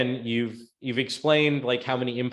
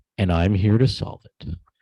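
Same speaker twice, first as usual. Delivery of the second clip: creepy put-on voice, louder; 4 semitones lower, 6 dB louder than usual. Reviewing someone's presentation, acting out their line in a creepy voice. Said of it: "you don't do it with the creepy voice".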